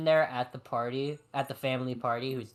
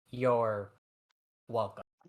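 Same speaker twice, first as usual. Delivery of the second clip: distinct long pauses between words, lower; 2 semitones lower than usual. Player voices a character nodding in acknowledgement, with a distinct pause between words. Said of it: "with a very very distinct pause between those words".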